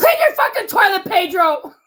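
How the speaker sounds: playful mock yell, loud and high. Yelling at Pedro after being asked to yell at him: mock yelling at Pedro. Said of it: "I'm gonna yell at you in Florida".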